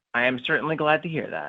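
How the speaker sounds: unenthusiastic, unexcited, lukewarm delivery. Answering a friend praising an episode, sounding unexcited. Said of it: "You sounded more excited earlier".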